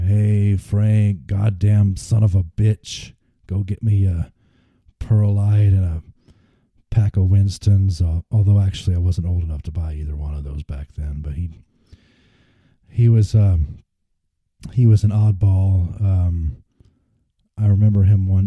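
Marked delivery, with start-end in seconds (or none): 0.0-8.0 slow, drawn-out, guttural drawl. Recalling what an oddball man used to say to him: slow, guttural imitation. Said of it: "kind of talked slow and and um, I guess sort of guttural".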